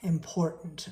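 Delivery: heavy stress leaning hard on the word "important". Teaching listeners to choose which words to emphasize: stress on "important". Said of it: "I gave emphasis on the word important".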